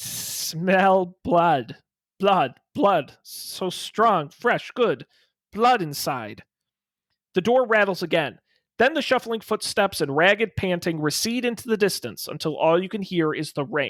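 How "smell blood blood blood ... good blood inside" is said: rough, thin, slow, scratchy rasping creature voice. Narrating a story where an unseen thing behind a closed door speaks, in a thin, rasping, scratchy voice. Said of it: "a thin, rasping voice, rough and scratchy like branches scraping".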